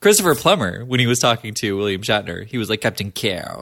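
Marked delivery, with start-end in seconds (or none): 2.8-3.6 put-on theatrical villain voice. Imitating Christopher Plummer saying the captain's name, Christopher Plummer's Chang inflection. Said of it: "a vocal inflection from the Plummer family".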